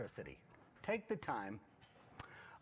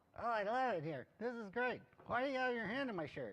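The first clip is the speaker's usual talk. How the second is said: high-pitched ventriloquist dummy voice, like a puppet; 9 semitones higher than usual. Doing a ventriloquism bit as the puppet Algie: Algie ventriloquist dummy voice. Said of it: "I've been practicing my ventriloquism".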